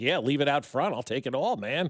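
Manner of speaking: normal talking voice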